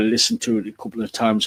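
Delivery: ordinary delivery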